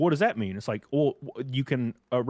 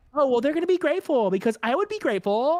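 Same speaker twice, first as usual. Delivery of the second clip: very high put-on young woman voice; 14 semitones higher, 4 dB louder than usual.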